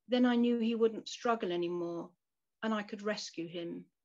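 plain

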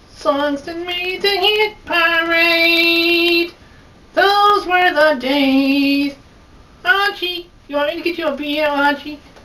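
very high, quick, rushed, shrill voice. Introduced by the host, a performer does an Edith Bunker impression. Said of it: "[name]'s gonna do Edith Bunker".

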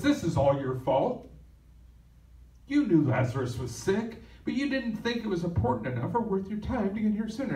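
acted, frustrated, accusing attitude, high and swooping. Retelling Martha's words to Jesus as the speaker imagines them, acting out Martha's frustration. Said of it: "I can hear the attitude in her voice".

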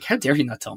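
soft, accusing, reproachful tone. Acting out how a woman reacts to not being told something, mock accusatory tone. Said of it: "like very accusatory tone".

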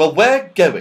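firm, resolute, very loud voice. Joe answers Mr. Whiskers, who warns that climbing is dangerous, firmly. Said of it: "said Joe firmly".

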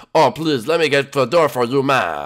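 put-on, affected, fancy French accent. A character welcomes a guest at the door in a fancy French accent. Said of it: "why are you talking like that?".

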